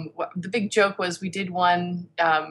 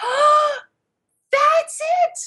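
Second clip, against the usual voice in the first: mock, very high, thrilled and excited gush; 5 dB louder than usual. Retelling a customer's reaction at a craft booth: imitating an excited customer. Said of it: "she's so excited".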